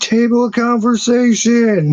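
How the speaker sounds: very high, squealing, screaming outburst. Retelling a streamer going off on a live stream: imitating someone screaming.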